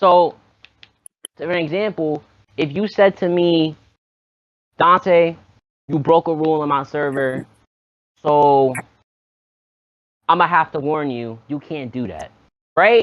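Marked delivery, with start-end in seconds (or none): 4.8-12.3 flat, calm, level delivery without edge. Demonstrating a warning given without any attitude: flat, no tone. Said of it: "No tone in your voice, no attitude, no screaming".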